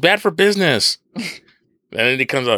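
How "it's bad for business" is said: put-on yelling, higher. Retelling a movie scene where everyone yells for Dom: imitating people yelling. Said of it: "they're all yelling".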